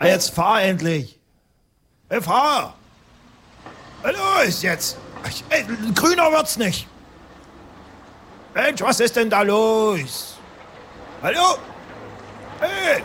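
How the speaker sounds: high, impatient shouting, "los" drawn out. Stuck at a traffic light, one person yells at the driver ahead. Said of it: "Du brauchst gar nicht so zu schreien".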